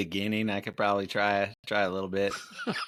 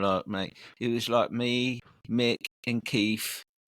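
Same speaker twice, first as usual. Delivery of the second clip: put-on British accent; 2 semitones higher than usual. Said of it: "I can do a couple. I got the Beatles".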